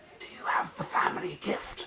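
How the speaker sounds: sharp, hushed, breathy hissed whisper. A woman grips a baffled listener tighter and asks her: hissed. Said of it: "the woman hissed".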